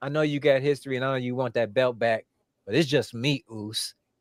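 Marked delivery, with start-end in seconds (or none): none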